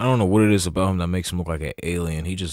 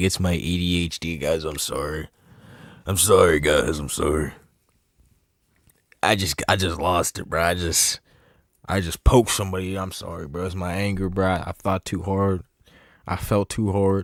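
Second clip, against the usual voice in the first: scornful, sarcastic, slow derisive delivery. Mocking a man who blamed the attack on ADHD: mocking imitation of an apology. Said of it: "He really tried to sit there and be like".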